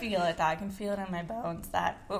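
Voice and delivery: voice cracking. Speaker's voice cracks mid-sentence, and the other speaker points it out. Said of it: "voice crack".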